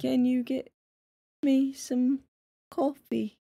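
put-on high, sad British boy voice. Trying to get someone to fetch more coffee, in a put-on sad, poor British boy voice. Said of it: "I'm trying to sound like a sad, poor British boy".

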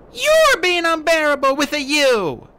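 exclaiming, loud, cried-out. Bickering over a spelling error in a note, the speaker cries out. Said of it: "Violet cried".

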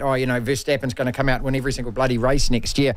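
ordinary talk, nothing marked

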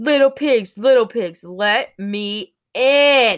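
growling. The hungry wolf bangs on the little pigs' front door and calls, growled. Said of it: "he growled".

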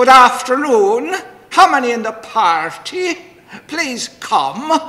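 put-on very loud, harsh, grating Irish accent. Retelling how a hostess greeted guests, in Noelle Doyle's harsh Irish accent. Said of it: "she had a very harsh Irish accent".

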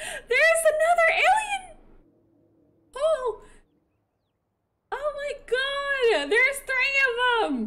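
squealing, thrilled, excited shriek, very high. A player exploring spots more aliens and lets out an excited scream. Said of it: "I didn't mean to scream".

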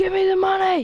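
high, loud shouting.

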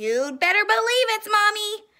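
very loud, booming voice that rises. Narrator reads Mommy the big canary answering Jeremy, booming. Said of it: "she boomed".

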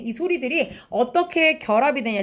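어떻게 given the main stress, falling end.

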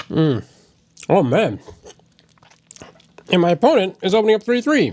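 speaking with mouth full. Player narrating a game against an opponent, talking with mouth full. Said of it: "I got mouthful of chocolate".

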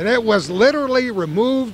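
normal talking voice

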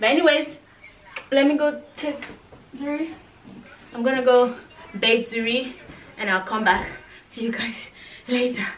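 winded, breathless talk. Telling the viewers they'll come back to them later, out of breath. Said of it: "I'm out of breath".

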